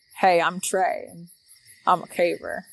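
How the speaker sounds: loud, booming chest voice, badly done accent. Retelling meeting a man in tunnel crawls who introduced himself: imitating Trey's loud full-chested voice. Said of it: "forgive my terrible accent".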